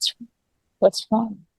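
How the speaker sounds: soft, hushed whisper. Retelling comforting a crying husband in the car: retelling a whisper. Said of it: "kept wiping his face and whispering".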